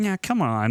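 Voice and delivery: odd, weird, small character voice. Imitating an actor's lines from the movie: imitating his weird little voice. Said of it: "I just liked his weird little voice".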